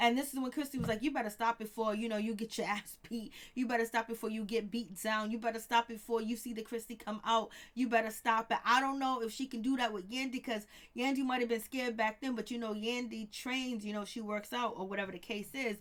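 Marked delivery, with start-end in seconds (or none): 1.0-8.6 imitated menacing, threatening tone. Retelling a woman warning another during an argument: imitating a threat.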